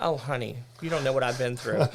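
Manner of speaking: ordinary delivery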